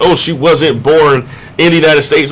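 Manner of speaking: plain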